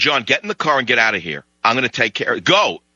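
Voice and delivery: ordinary talk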